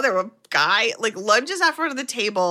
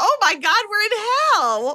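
mock very high-pitched shrieking scream; 11 semitones higher than usual. Retelling a story, acting out someone seeing a giant demon: retelling a scream. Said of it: "Troy finally screams".

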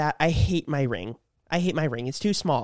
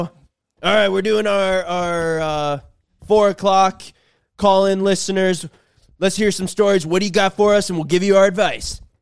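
mock biker-type radio host voice, louder; 3 semitones higher, 7 dB louder than usual. Retelling what two radio hosts said, imitating biker-type radio hosts. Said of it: "they go".

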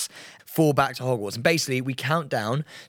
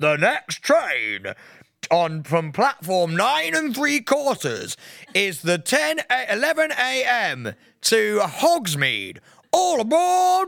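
train announcer voice, much higher; 9 semitones higher than usual. Retelling a trip, the speaker imitates the tannoy announcing the next train, train announcer voice. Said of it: "He has that right voice".

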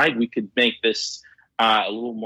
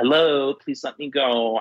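put-on little robot voice, higher; 4 semitones higher than usual. Joking about snagging a delivery robot and hearing it speak: voicing a little delivery robot. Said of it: "see its little personality kick in".

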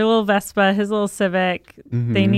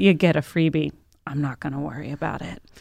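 mock groggy, sleep-deprived, half-asleep voice; 5 semitones lower, 4 dB quieter than usual. Retelling what a sleep-deprived friend said after being rear-ended: imitating someone sleep deprived. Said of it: "he's so sleep deprived".

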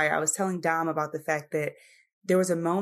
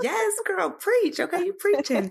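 play-acted very high, shrill, hyped-up cheering holler; 14 semitones higher, 4 dB louder than usual. Reacting to the other speaker's argument, imitating own shouting. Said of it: "I'm over here shouting like".

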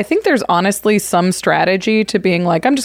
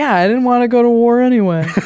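chill, unbothered, laid-back surfer dude voice; 4 semitones higher than usual. Voicing a card creature as a chill surfer guy: laid-back surfer guy voice. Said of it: "He's just a surfer guy".

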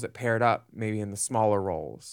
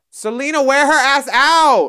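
very loud, very high, shrill yell; 13 dB louder than usual. Recalling a line yelled during the lip sync: retelling a yell. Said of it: "Mistress yells".

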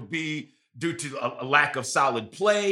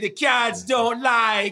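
put-on Jamaican accent, higher; 7 semitones higher than usual. Making a football prediction as Miss Cleo: Miss Cleo impression. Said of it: "I'm gonna put my Miss Cleo hat on".

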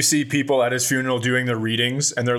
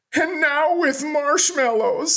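very high, slow, drawn-out sobbing wail; 13 semitones higher than usual. Acting out the kids at the end of an imagined commercial: crying kids. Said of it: "it's just the kids crying".

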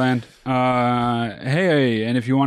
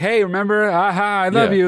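put-on warm, sincere tone, higher; 7 semitones higher than usual. Retelling how two friends greeted the speaker: imitating a sincere greeting. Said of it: "'Cause it was like".

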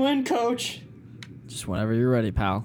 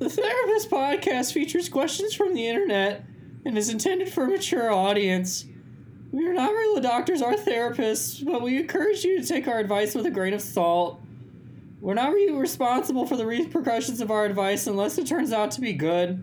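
put-on whiny preteen voice, cracking, much higher; 13 semitones higher than usual. Reading the podcast disclaimer in the voice a co-host asked for: preteen losing his voice. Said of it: "Like the preteen losing his voice".

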